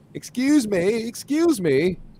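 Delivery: drawn-out, slow, very high put-on British accent. Retelling how a woman ran up to someone: imitating a British accent. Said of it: "speaking in a British accent".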